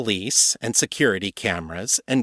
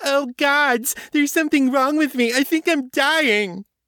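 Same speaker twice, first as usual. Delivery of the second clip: very high, whiny, sneering taunting voice; 3 dB louder than usual. Reading a novel aloud, a character mocks another: high mocking whine. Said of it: "She pitched her voice in a high, mocking whine".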